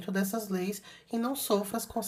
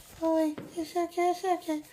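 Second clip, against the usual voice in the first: very high-pitched, put-on old voice; 10 semitones higher than usual. Recalling first videos, mimicking the speaker's own old speaking voice. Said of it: "por que eu falava desse jeito?".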